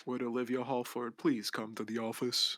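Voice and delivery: flat intercom-style voice. Voicing a school intercom calling a student to the office: monotone intercom voice. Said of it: "The monotone voice on the intercom".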